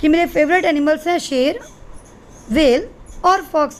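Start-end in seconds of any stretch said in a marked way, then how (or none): 1.2-3.8 slow, short pause after शेर. Teaching comma use in a list of favourite animals, short pause after शेर. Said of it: "शेर वेल को हमने थोड़ा सा रुक के बोलना है".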